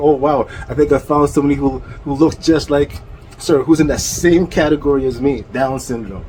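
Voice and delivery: ordinary talk, nothing marked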